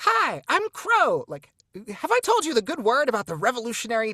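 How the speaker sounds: very high, loud, squeaky, swooping character voice. Describing a revolutionary crow in a book, demonstrating a high-pitched Crow voice. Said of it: "like high pitched voice".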